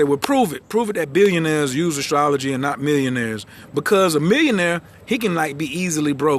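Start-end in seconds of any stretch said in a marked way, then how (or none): none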